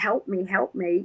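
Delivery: mock panicked cry in a child's voice. Retelling crying out to their father as a child with a burning leg, imitating a panicking child. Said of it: "I'm panicking as a child, going".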